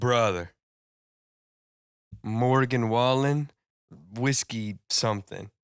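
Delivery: put-on terrible Mexican accent drifting Eastern European sounding. Retelling what someone said coming back ten minutes later, in a terrible mexican accent. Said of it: "worst, most Eu- Eastern European sounding Mexican accent".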